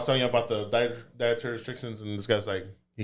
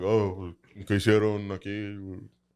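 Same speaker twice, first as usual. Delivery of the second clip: put-on super deep voice, much slower; 2 semitones lower than usual. Telling a story, quoting a man's question in a super deep voice. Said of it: "got this like super deep voice".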